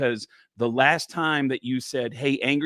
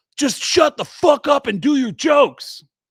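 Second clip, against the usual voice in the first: angry, high-pitched, loud yell; 12 semitones higher, 8 dB louder than usual. Retelling what an angry heckler yelled from the crowd: imitating a heckler yelling. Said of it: "he yelled out".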